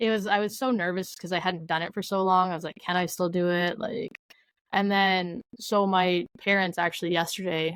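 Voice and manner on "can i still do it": ordinary talk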